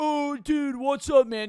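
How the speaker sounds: very high, very loud put-on hype voice. Mocking someone walking up to a person already filming, in a fake animated persona. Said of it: "You're putting on some ani- animated persona".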